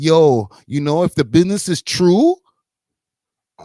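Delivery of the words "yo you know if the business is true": put-on Toronto accent laid on heavy, super overt. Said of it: "she was like".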